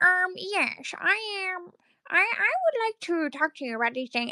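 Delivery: put-on nerdy voice. Speaker retells a man on a loud phone call in a grocery store: nerd emoji voice. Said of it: "he literally sounded like the nerd emoji voice".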